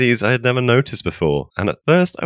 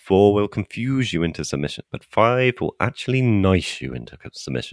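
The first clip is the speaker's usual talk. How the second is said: usual speaking voice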